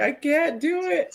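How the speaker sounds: high, desperate, frantic pleading, words drawn out. Show host retelling a frantic voicemail sent while sick, imitating a frantic voicemail. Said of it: "I sent Willie a frantic voicemail".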